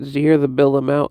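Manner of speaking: ordinary talk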